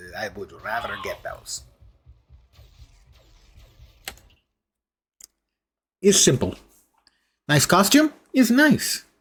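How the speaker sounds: bad put-on Russian accent, sing-song. Commenting on a game costume and upgrades in a bad Russian accent. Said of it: "I'm sorry about the Russian accent".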